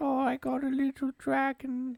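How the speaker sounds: put-on very high childlike British voice. Showing off a voice to a co-speaker; childlike British Harry Potter voice. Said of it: "That's my uh childlike uh British voice".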